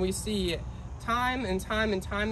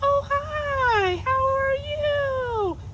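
put-on very high, slow, drawn-out cooing baby talk; 6 dB louder than usual. Pastor showing his audience the voice he uses with a baby: baby-talk voice. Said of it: "when I talk to a baby, I use a certain voice".

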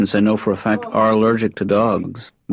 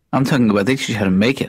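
ordinary delivery

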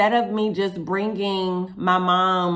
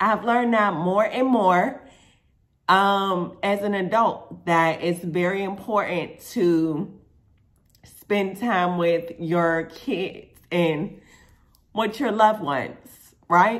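choked up, near tears, "as" drawn out. Speaker addresses viewers, on the verge of tears. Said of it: "I don't know why I'm about to cry and get emotional".

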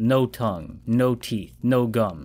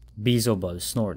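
ordinary delivery

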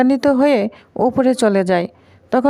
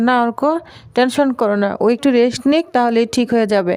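normal talking voice

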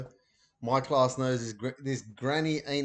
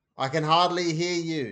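loud, shouted voice; 4 semitones higher, 4 dB louder than usual. A mother on the phone answers her whispering child, shouting back. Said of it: "she shouted back".

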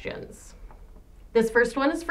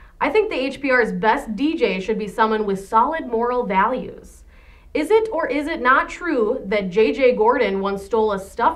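normal talking voice

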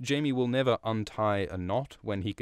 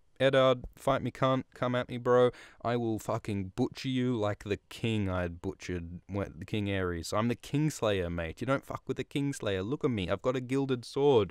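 ordinary delivery

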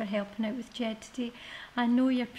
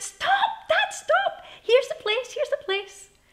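very high, loud, excited shrieking; 8 dB louder than usual. Narrator reading Mum and Helen calling to Dad on a tiny road, screeching. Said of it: "had both screeched out".

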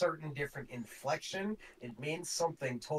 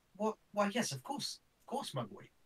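bad, struggling put-on Irish accent, high and sing-song; 6 semitones higher than usual. Narrating a scene, the speaker voices a character and struggles with a bad Irish accent attempt. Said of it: "I can't get the fucking accents".

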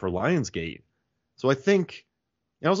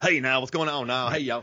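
over-the-top, exaggerated put-on American accent. Describing a Scottish guy on a TV show, the speaker mimics him: Scottish guy's American accent. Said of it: "like doing an American accent for us".

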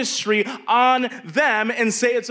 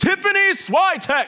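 high, shrill, yelled-out grand delivery; 9 semitones higher than usual. Recalling someone at the door shouting arrivals' names: shouted name announcement. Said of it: "Like that, like they would shout their name".

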